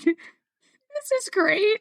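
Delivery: sarcastic, high, slow, fake-calm cheerful tone. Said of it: "And I'm like".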